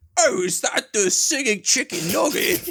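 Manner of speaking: very high, loud, awful fake British accent. Asked how Nav said it, repeat his question in a bad British accent imitating Nav. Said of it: "That was maybe the worst British accent I've ever heard".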